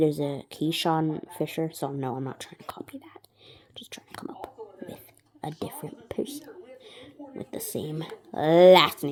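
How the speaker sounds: quiet, low-pitched, casual chatting. A speaker making up a person's name, talking quietly. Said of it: "I'm talking quiet".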